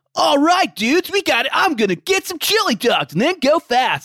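high-pitched animated hero voice. Discussing voiced Sonic games, doing a 90s cartoon Sonic voice. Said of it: "he seems to have a real like 90s cartoon character vibe".

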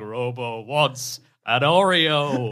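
very slow cyborg cadence, one word stretched long. Recalling a scene from RoboCop 2, imitating RoboCop's cadence. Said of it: "it'd be that cadence".

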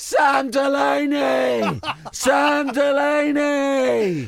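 very slow, high, loud, stretched-out triumphant yell. Imagining scoring a World Cup final winner and shouting his own name: acting out a celebratory shout. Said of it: "I'd be like giving it".

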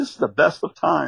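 usual speaking voice

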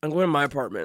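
put-on cold, irritated tone, low and annoyed. Retelling a stranger's reply after being questioned, retelling an annoyed deadpan line. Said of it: "he was like so annoyed".

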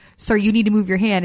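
ordinary talk, nothing marked

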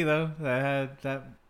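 ordinary delivery

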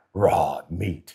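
mock snarling voice. Retelling his on-camera answer when asked what he eats, imitating a snarl. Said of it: "I looked at the camera and I snarled".

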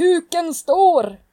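very high, loud, slow stage scream.

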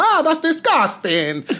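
put-on Italian accent. Speaker retells what an Italian woman said to him: Italian accent impression. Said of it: "That's my Italian accent".

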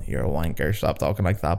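low, soft, scolding inner-voice tone. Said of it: "I can hear my brain going".

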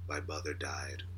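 very low, flat, one-note monotone delivery. Imitating how he said everything on the same note, in a flat monotone. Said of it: "just the same note, same monotone".

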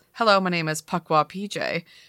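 ordinary delivery

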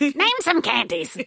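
slow, high, drawn-out mock quizmaster voice.

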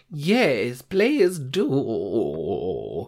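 put-on sing-song elderly lady voice. Replying on air to the other host: old woman voice. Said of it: "That's my old woman voice".

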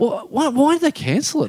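play-acted, very high-pitched, heated, worked-up anger. Retelling a friend's reaction to the cancelled party: imitating him getting angry. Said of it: "he's starting to get angry".

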